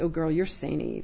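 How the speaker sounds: usual speaking voice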